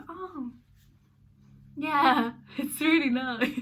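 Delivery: high-pitched, fake-bright, gushing polite delight. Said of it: "you kind of have to go".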